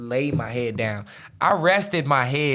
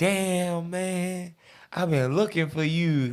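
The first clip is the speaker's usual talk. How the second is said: mock drunk speech, higher pitch; 5 semitones higher, 3 dB quieter than usual. Retelling running into a cousin while very drunk: imitating own drunk talk. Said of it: "that's how I'm talking to him".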